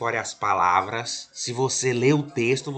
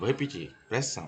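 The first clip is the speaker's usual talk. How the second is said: ordinary delivery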